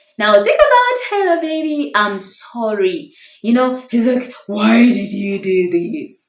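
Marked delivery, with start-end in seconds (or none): 4.5-6.2 fake deep man's voice. Quoting what he says during a marriage argument, put-on manly voice. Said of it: "I'm trying to speak like a man".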